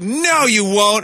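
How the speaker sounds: put-on high, slow, drawn-out defiant child whine.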